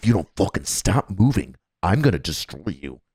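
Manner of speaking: very low, threatening drill-sergeant style half-whisper. Describing a drill sergeant behind a trainee, imitating a half-whispered threat. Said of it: "He whispers in your ear".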